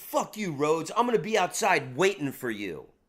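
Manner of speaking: acted-out, hostile, menacing, threatening tone. Retelling a man's threat after the manager asked him to leave: imitating a threatening man. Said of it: "The guy just threatened me".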